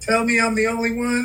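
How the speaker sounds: ordinary talk, nothing marked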